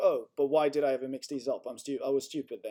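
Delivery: ordinary talk, nothing marked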